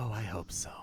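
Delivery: low, quiet mutter under the breath. Voicing a character overheard by the players: muttered under his breath. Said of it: "Just under his breath".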